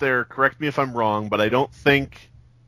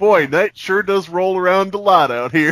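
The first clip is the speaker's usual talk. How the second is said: folksy, pitched-up musing, wondering aloud; 5 semitones higher than usual. Picturing a dude with fists on hips looking up at the sky: mock folksy musing. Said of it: "I'm picturing some dude standing out".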